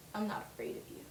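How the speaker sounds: soft, serious whisper. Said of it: "she gets all serious".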